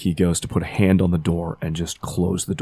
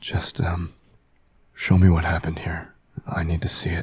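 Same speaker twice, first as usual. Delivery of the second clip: soft whisper. Voicing a character asking unseen spirits to show the past: whispering. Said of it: "sort of whispers to spirits".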